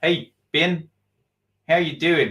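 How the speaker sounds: clumsy, bad put-on New Zealand accent. Greeting a listener from New Zealand, in a bad New Zealand accent. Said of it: "I can't do the New Zealand accent".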